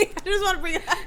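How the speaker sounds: high, fast giggling laughter.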